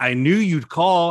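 put-on sarcastic line reading. Showing how an actor's line was supposed to sound: sarcastic line reading. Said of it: "I think he's supposed to sound sarcastic".

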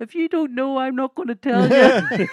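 piercing woman's shrill yell, very high, very loud. Retelling a heckle shouted from the back of the audience: imitating a woman heckler. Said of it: "this woman's voice is".

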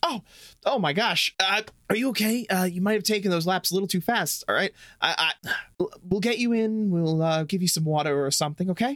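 concerned, worried voice. Voicing a teacher who finds a fallen student: concerned teacher voice. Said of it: "she turns toward you with concern".

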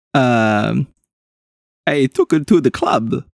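put-on vampire accent. In a mock cross-examination, the vampire answers the questioner in a vampire accent. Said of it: "I have to get into my accent".

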